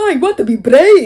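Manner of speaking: loud, slow, drawn-out put-on Scottish accent. Mocking a character's voice while wanting her out of here, Merida voice. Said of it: "that Meredith voice. ... What is that, Scottish?".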